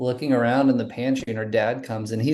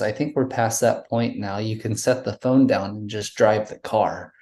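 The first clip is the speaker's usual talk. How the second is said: ordinary delivery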